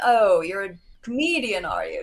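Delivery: put-on strong, laid-on British accent. Retelling what Doug said on meeting him: imitating Doug's British accent. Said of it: "he's very British".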